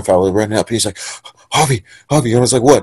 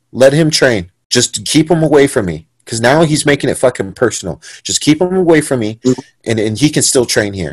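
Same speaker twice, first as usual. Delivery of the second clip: ordinary talk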